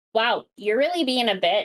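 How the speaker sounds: mock catty, snide, sneering tone. Retelling how someone asked a question: imitating a snide tone. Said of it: "have it with that tone of voice of".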